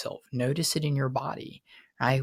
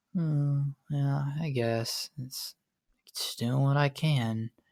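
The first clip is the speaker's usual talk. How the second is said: slow, super flat monotone, no enthusiasm. Describing how depressed people talk, then demonstrating: super monotone voice. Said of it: "They got a super monotone voice".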